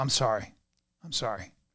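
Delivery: very quiet, very low, calm voice. Recounting apologizing after yelling at her, retelling a calm apology. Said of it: "I call very calm".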